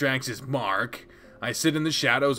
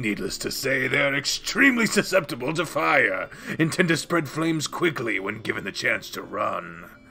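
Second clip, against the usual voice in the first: normal voice roughened with a rasp, rattled off quickly. In a role-playing game, telling his character's backstory; raspy Relgar voice. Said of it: "I am [name], ... he added a rasp to his normal voice".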